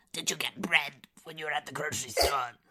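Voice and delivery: put-on gargoyle voice. Demonstrating a favorite bit, saying mundane things in a gargoyle-like voice. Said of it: "look kind of like a gargoyle and just be like".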